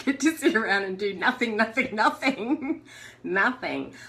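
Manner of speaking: laughing and giggling while talking. Recounting breaking a knee abroad and getting to do nothing, giggling.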